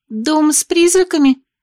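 quavering. A teacher lists the obstacles and a girl asks back: trembling voice. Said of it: "переспросила дрожащим голосом Юми".

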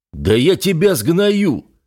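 very high, slow, drawn-out yelling. The older officer shouts at the narrator, who refused to salute. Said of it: "прикрикнул тот".

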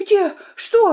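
startled, shrill scream, very high-pitched. Woken suddenly by the narrator, she leaps out of bed: screaming. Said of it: "завопила она и вскочила с кровати".

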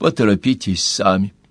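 ordinary delivery

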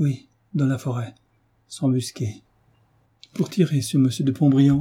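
quavering, halting voice. Madame Bastien answers David in a trembling, broken voice. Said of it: "reprit Madame Bastien d'une voix tremblante, entrecoupée".

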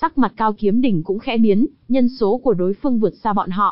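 ordinary delivery, nothing marked

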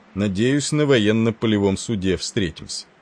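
plain reading voice

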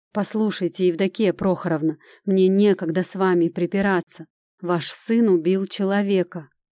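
plain reading voice

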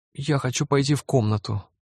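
high, begging, imploring, pleading voice. Pressed by his father's question at the table, the narrator answers, pleading. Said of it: "умоляюще попросил я".

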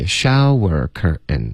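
only the syllable show of shower stressed. Correcting the stress in shower curtain: stress only on show. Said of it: "你的重音应该只有shower 的这个音节".

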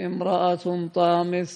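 normal talking voice

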